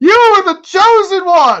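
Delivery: very high, very loud anguished shouting cry. Joking about a team losing, shouting into the sky: Obi-Wan Kenobi shout. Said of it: "I'm gonna shout into the sky just like Obi-Wan Kenobi did".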